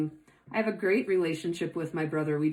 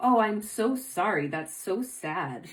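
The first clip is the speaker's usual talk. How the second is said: mock pitying tone. Showing how someone who pities another person talks: mock pitying tone. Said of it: "Saying it in that tone of voice".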